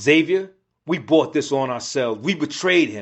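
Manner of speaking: plain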